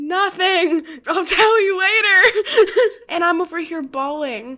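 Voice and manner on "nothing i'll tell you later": loud, high, drawn-out yell. Retelling her mom yelling back at her dad: retelling mom's yell. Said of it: "my mom yells at him and is like".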